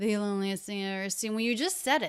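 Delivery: rapid, no pause. Demonstrating how a performer speeds up the line, speaking a lot faster. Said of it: "here he starts speaking a lot faster".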